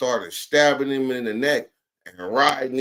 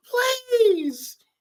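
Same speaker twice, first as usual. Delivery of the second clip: mock very high, shrill screaming. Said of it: "She was screaming like a real woman".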